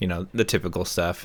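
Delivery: plain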